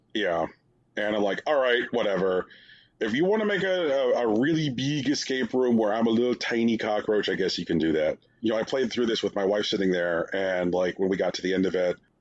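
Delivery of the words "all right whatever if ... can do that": plain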